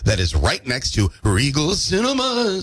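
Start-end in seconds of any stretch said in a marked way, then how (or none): 1.2-2.6 high, eerie, spooky put-on haunted-house voice. Giving the UVM Haunted House location, spooky voice on Regal Cinemas. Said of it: "did I do Regal Cinemas in the spooky voice?".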